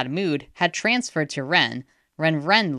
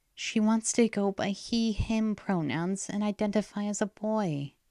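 faint, barely-there, barely audible half-whisper; 6 semitones higher, 6 dB quieter than usual. After a deep breath, someone tells another person: faint half-whisper. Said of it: "whispered so faintly".

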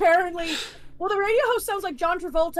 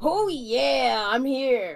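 deep, very slow drawl, 'oh yeah' stretched out; 4 semitones lower than usual. Joking about wrestler voices: Macho Man Randy Savage voice. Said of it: "that's Macho Man Randy Savage".

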